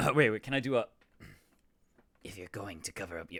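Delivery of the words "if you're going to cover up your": goblin voice, much quieter and faster. Trying a serious voice for her roleplay character: goblin-like voice. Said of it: "that just sounds like a goblin".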